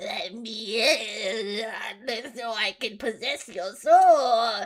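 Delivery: very slow, spooky, creepy ghost voice. Mocking how ghosts ask to be let inside, in a creepy ghost voice. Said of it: "ghosts have to be creepy with it".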